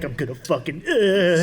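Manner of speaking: ordinary talk, nothing marked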